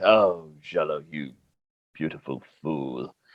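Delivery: deep, very low muttering under the breath. Voicing a character muttering about a companion: said under his breath. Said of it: "Remy says under his breath".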